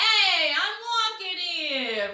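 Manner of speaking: loud, drawn-out, hollered shout. Showing a favorite example of the call sound: shouted street call. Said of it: "this would be the kind of the sound".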